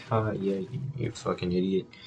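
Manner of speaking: very quiet, limp, half-hearted jeering tone. Retelling another guy's taunt in class, imitating a half-hearted taunt. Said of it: "giving real half-assed attempts at it".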